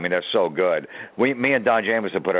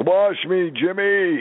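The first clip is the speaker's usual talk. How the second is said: put-on old man voice, very high-pitched; 12 semitones higher than usual. Pranking a telemarketer, a buddy pretends to be a grandfather, old man voice. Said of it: "talking like an old man".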